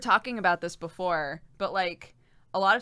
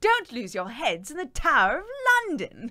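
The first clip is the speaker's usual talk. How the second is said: put-on standard English accent, pitched up; 6 semitones higher, 4 dB louder than usual. Asked to do a normal english accent, the speaker tries one. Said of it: "Can you do a normal English accent?".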